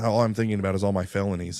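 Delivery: normal talking voice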